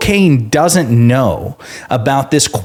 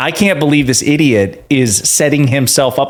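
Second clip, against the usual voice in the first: ordinary talk, nothing marked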